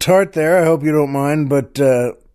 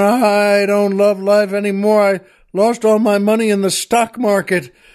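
acted yelling, put-on shout; 11 semitones higher than usual. Telling a joke, voicing the jumper answering the oil man: retelling a yell back down. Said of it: "the guy yells back down".

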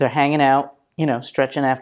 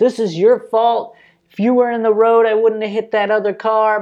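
high, loud, hollered screaming rant; 8 semitones higher, 4 dB louder than usual. Retelling a driver after a crash hollering at a man nearby: imitating someone screaming. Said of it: "was screaming at him".

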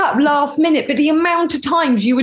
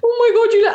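put-on crying voice, higher; 8 semitones higher than usual. Retelling being left behind and coming down: imitating tearing up. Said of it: "obviously tearing up".

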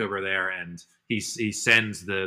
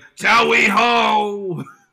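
mock yell, much higher pitch, much louder; 13 semitones higher, 9 dB louder than usual. Describing a scene where a rider chases the fox, retelling a yell.

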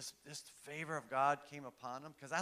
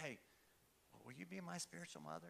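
soft, hushed whisper, close in; 3 semitones higher, 13 dB quieter than usual. Retelling a quiet request to a woman seated in front: retelling a whisper. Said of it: "I just whispered to her".

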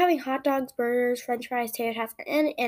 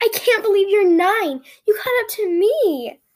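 high, bursting, full-energy, very energetic scream; 8 semitones higher, 6 dB louder than usual. Kate jumps out of the van on the narrator's birthday, screaming in a very energetic voice. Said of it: "she screams in her very energetic voice".

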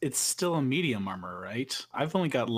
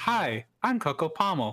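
put-on computer assistant voice; 2 semitones higher than usual. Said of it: "if you say in Cortana's voice".

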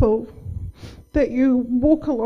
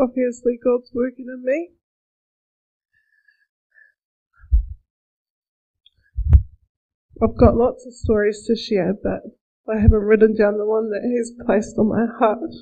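crying while talking, tearful voice; 2 semitones lower than usual. Starting a talk to a church group, crying while talking. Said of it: "I'm not sure why I'm crying".

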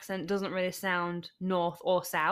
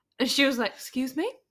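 ordinary talk, nothing marked

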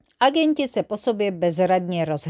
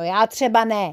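ordinary delivery

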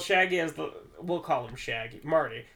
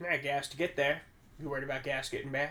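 put-on creepy, unsettling man voice, quieter; 5 dB quieter than usual. Recounting a story, the speaker voices the man's reply, imitating an unsettling man. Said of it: "just unsettling".

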